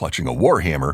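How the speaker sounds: plain reading voice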